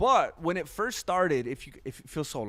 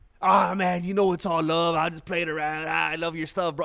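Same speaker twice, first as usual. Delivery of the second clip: put-on negative, mocking voice, louder; 2 semitones higher, 6 dB louder than usual. Retelling how negative commenters reply after being answered back: imitating a commenter backpedaling. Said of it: "and then they'll be like".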